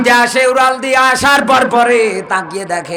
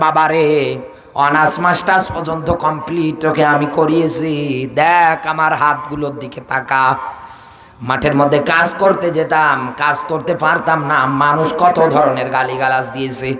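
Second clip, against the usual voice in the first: usual speaking voice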